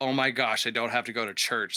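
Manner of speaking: imitated elated, overjoyed voice. Retelling a thought after throwing up before church: imitating own past elation. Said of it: "this elated feeling of".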